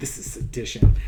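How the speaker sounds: put-on muttering under breath. Retelling own first reaction to news clips: muttering under breath. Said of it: "under my breath".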